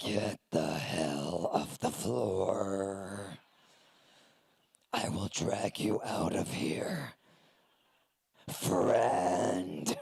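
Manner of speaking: deep, very low, slow, drawn-out demonic voice. Showing how they talk to a melting-down kid: lower satanic register. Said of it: "I use my lower satanic register of my voice".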